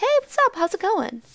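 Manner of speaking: nice, genuine, easy manner. Retelling how the speaker greeted him, not in their rusty voice, retelling a nice, genuine greeting. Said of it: "Not sounding like my rusty-ass voice".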